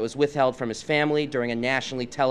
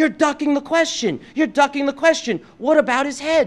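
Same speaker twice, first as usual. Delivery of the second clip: put-on shrill, loud, high-pitched screaming; 13 semitones higher, 6 dB louder than usual. Retelling a man who started screaming at him during a discussion, imitating someone screaming. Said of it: "he starts screaming at me".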